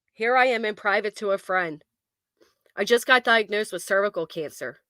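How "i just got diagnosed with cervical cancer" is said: ordinary talk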